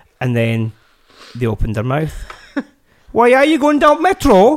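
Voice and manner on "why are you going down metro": put-on failed Welsh accent, very high. Retelling what the troublemakers who got on the train said, in a bad Welsh accent. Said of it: "I can't do the accent".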